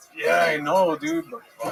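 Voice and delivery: strong Mexican accent. Answering someone who asks why they don't get an earlier job, strongly Mexican-sounding accent. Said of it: "you could not have sounded more Mexican".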